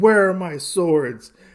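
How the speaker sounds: mock furious, high, very angry, charging voice. Retelling a comic scene where Usagi charges the brigands: acting out angry Usagi. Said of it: "he is very angry. And he's like".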